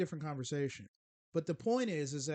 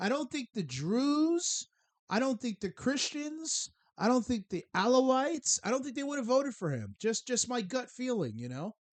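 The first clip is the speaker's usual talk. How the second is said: rancorous, sarcastic tone; 7 semitones higher, 5 dB louder than usual. Arguing that nobody voted the leader in: sarcastic rancor. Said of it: "detect the rancor in my voice, A K A sarcasm".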